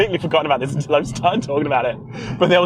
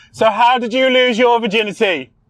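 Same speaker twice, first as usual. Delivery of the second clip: mock theatrical carrying voice, loud and high; 7 semitones higher, 5 dB louder than usual. Acting out a first date asking across the whole restaurant, imitating a loud carrying voice. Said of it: "they loudly say across the whole fucking restaurant".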